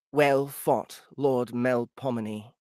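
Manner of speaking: strong, slow female voice. Reading a story aloud, voicing a defeated opponent: strong female voice. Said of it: "you can just do a strong voice, female".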